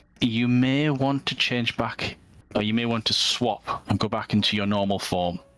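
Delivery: whispering in a game-character voice. Voicing a character who whispers advice to a player: whispering in character. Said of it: "Irovich whispers to you".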